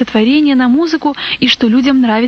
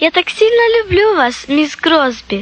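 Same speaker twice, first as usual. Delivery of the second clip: outright exclaimed delivery with pitch raised; 5 semitones higher than usual. Reading a story, a girl hugs the woman who comforted her; exclaiming. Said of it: "воскликнула Сара".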